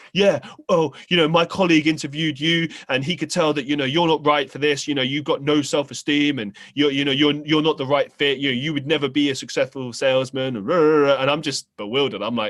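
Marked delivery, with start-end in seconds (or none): 0.1-10.5 heated, berating, angry ranting shout. Retelling how an interviewer reacted to being turned down: imitating someone angrily shouting. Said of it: "gets really angry at me, starts shouting".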